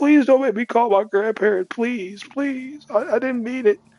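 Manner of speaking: tearful, crying voice, pitched very high. Retelling being made to call grandparents after trouble at school: imitating crying while pleading. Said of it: "I was like literally crying".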